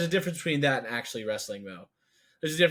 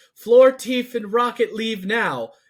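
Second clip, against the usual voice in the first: put-on heart-wrenching scream, higher and louder; 8 semitones higher, 9 dB louder than usual. Retelling a movie scene where a character screams at others to leave: imitating Lila's heart-wrenching screaming. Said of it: "in the most heart-wrenching, like, screaming voice".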